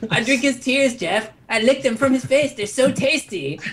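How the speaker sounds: put-on high, lisping child voice. Told they sound like Cartman, a speaker answers in a Cartman impression with a lisp. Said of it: "that would be like the perfect Cartman".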